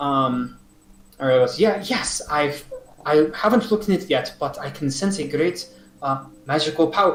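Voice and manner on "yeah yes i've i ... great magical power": put-on bad French accent. Voicing Ariel replying to another character, in a bad French accent. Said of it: "fucking botching this French accent".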